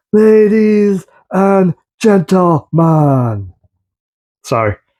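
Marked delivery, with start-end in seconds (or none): 0.1-3.5 horrible, overdone wrestling ring announcer voice. Showing off a figure, doing a horrible impersonation announcing a wrestler. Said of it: "my horrible, horrible impersonation of him getting ready to announce Gunther".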